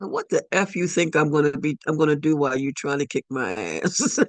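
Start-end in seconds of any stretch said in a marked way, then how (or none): none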